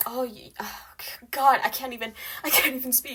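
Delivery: loud, snide, snarky, cutting tone. Retelling a teacher's remarks made in class: imitating a teacher's snarky remark. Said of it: "these snarky remar-, remarks at me".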